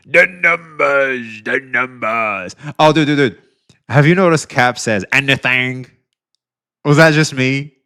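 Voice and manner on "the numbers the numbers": very slow, deliberate, drawn-out delivery. Quoting Captain Cabinet on caring about the metrics: imitating Captain Cabinet. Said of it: "To quote, uh, Captain Cabinet".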